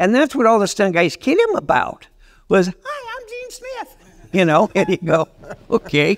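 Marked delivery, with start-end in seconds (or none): 2.7-4.0 put-on squeaky, very high little voice. Recalling how the stunt guys kidded him about his voice: Gene Smith's high-pitched voice. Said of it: "he talked like Mickey Mouse. He had his high-pitched voice".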